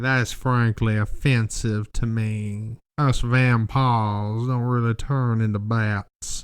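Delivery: put-on slow, old-timey Alabama Southern drawl. Retelling what a guy claiming to be a vampire said, old-timey Alabama accent.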